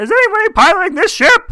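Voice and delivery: squeezed-up, high, loud voice. Recapping a movie, contrasting Kermit's usual voice with his amnesia voice, Kermit the Frog voice. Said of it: "as opposed to his usual like".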